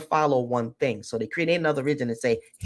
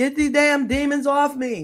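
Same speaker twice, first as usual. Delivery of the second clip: mock, high-pitched, tormented, anguished screaming; 11 semitones higher than usual. Retelling a dying man's last words about demons: imitating Pope Francis screaming. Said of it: "he was screaming".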